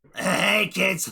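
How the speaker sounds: high-pitched cartoon clown voice. Showing the other speaker an impression: Krusty voice. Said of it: "that's actually a really good Krusty".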